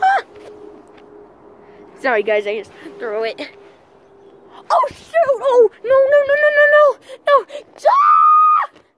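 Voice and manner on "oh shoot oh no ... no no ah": high, loud, fake panicked screaming. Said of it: "sorry for all that screaming".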